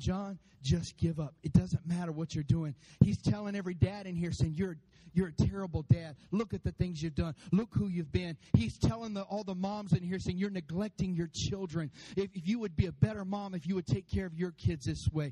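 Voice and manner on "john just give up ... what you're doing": put-on whisper, lower pitch. Speaking to the church, acting out him whispering in listeners' ears: acting out a whisper. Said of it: "And he's whispering".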